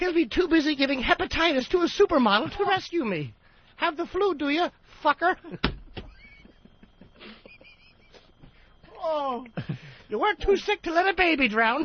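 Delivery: put-on baby voice sounding like an old lady. Performer voices a baby character, in a baby voice like an old lady. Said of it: "the baby sounds like an old lady when I do it".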